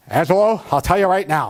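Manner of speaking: put-on big, booming voice. Retelling what a strict coach told his assistant principal: big booming voice. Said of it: "He had this big booming voice".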